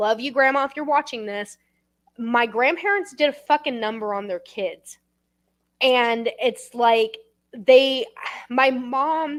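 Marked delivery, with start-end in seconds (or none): 2.2-9.4 close to tears, choked up, words very slow. Speaking of grandparents to another speaker, close to tears. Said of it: "You can if you want".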